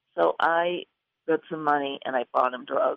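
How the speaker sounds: plain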